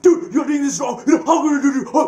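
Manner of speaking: very high, loud, uncontrolled angry outburst. Contrasting healthy and unhealthy anger for listeners, demonstrating unhealthy anger. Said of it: "that's unhealthy anger".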